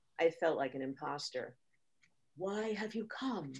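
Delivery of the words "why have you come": sensual, intimate, soft and sensuous voice. Narrating the guru's translator questioning a visitor, deep, sensuous voice. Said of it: "asked in a deep and sensuous voice".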